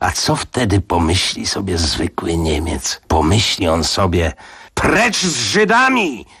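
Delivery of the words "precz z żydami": very high shouted outburst. A man voices what an ordinary German would think, shouting. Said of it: "Krzyknął Shotlander".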